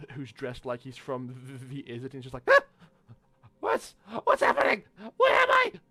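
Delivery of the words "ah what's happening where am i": skittish, nervous goblin voice, much higher. Describing a goblin dressed like he's from the Izzet, the speaker voices him: skittish goblin voice. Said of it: "a very skittish looking goblin".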